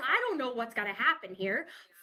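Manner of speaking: put-on frantic panicked voice. Retelling an ICU emergency with a patient being bagged, reenacting past panic. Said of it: "I'm losing my shit".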